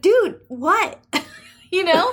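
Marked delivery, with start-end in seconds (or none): 0.0-1.0 high-pitched, exasperated disbelief. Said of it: "you're like".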